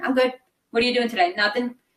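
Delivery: put-on curt monotone. Recalling their younger self answering family questions, imitating monotone, abrupt replies. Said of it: "just be very monotone and very abrupt".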